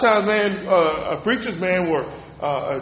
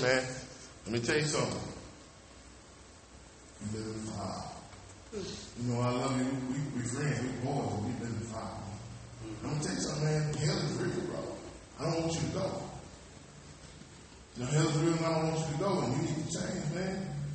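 acted, soft, gentle, hushed friendly tone; 5 semitones lower, 15 dB quieter than usual. Showing the same message told kindly to a friend: nice, friendly preaching. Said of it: "I can get up 'cause I'm nice".

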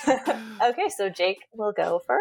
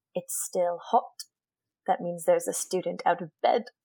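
put-on British English accent; 3 semitones lower, 3 dB quieter than usual. Quoting a line for others to guess the character, Filch impression with accent. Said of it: "I'll be doing the accent again".

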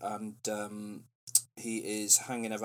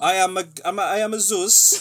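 put-on Greek accent sounding Italian, higher and louder; 9 semitones higher, 8 dB louder than usual. Imitating an actor's Zeus from a film: imitating Russell Crowe's Zeus accent. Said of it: "doing a Greek accent that sounds more like an Italian accent".

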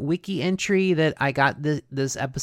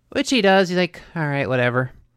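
plain

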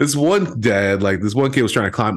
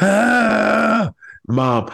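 put-on very high, tearful little kid crying wail; 12 semitones higher than usual. Retelling a hurt kid at a farmer's market coming up to his mom, imitating a crying kid. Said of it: "And the kid comes up crying".

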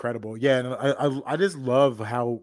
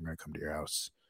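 put-on whisper under the breath, lower and quieter; 9 semitones lower, 16 dB quieter than usual. Acting out a pushy salesman, Kevin Nealon under-breath whisper. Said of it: "whisper something underneath his breath".

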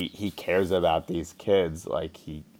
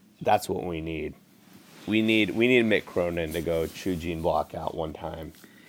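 ordinary delivery

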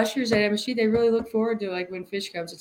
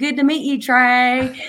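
put-on Dallas Texas accent; 3 semitones higher, 6 dB louder than usual. Tell how your friend from Dallas greeted someone famous, imitating your friend's Dallas accent. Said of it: "she's from Dallas, so she's got this accent".

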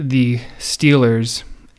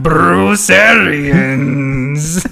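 put-on pirate accent, laid on fully; 4 semitones higher, 4 dB louder than usual. Naming a player for the pirate game: full pirate accent. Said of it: "A little full accent on it".

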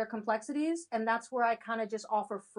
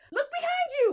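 put-on shout, higher and louder; 6 dB louder than usual. Retelling how viewers yell at a horror movie: imitating yelling at the screen. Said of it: "We're the ones yelling".

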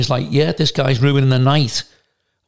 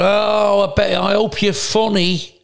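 mock, drawn-out, high drunken young man's jeer; 7 semitones higher than usual. Retelling what a drunk lad at a club shouted: imitating a drunk lad shouting. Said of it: "And he shouted".

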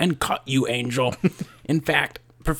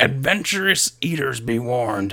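pirate-like voice; 4 semitones lower than usual. Reading a line from a news article aloud: piratish voice. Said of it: "I don't know why that was, like, piratish".

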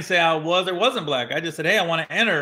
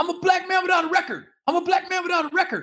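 acted-out shouting, high and raised; 13 semitones higher than usual. Retelling a driver the speaker pulled over who starts yelling, imitating his yelling. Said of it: "he just starts yelling".

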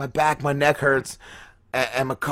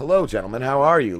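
put-on very calm, refined voice. Retelling finding a once-wild acquaintance in a smoking jacket: imitating Chris Schmidt, very calm. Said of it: "the calmest dude".

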